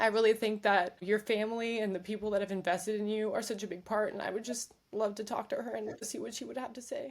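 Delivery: choked-up, voice breaking. Talking about wanting to hear her advice, crying while speaking. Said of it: "I didn't know I was gonna cry on this".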